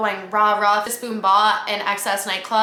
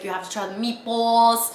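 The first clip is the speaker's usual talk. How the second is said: put-on Brooklyn accent; 2 semitones higher than usual. Retelling what a man said over dinner at Carbone, in his Brooklyn accent. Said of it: "in his little accent".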